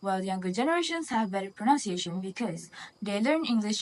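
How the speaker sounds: ordinary talk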